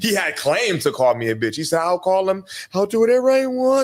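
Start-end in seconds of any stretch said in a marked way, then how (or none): 1.8-3.9 mocking a soft voice, higher. Retelling what another man said during an argument, imitating a soft voice.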